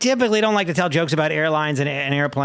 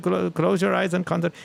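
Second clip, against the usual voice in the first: put-on Indian accent, higher and faster; 2 semitones higher than usual. Joking about how a meditation app would talk, in a put-on Indian accent. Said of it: "an Indian accent".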